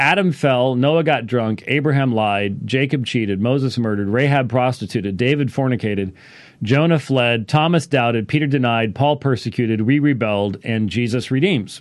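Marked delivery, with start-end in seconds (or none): none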